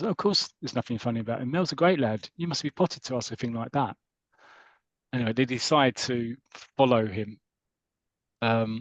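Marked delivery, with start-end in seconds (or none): none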